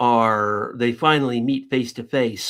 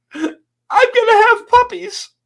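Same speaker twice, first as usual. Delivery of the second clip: acted out, very high, loud, pitiful sobbing wail; 8 dB louder than usual. Telling a joke, voicing the third woman, imitating pitiful crying. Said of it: "the third woman starts crying, just just just pitifully".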